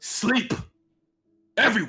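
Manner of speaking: loud bellowing voice. Narrating a scene, a figure calls out as the doors fly open, loud bellowing voice. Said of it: "in this loud bellowing uh, bellowing voice".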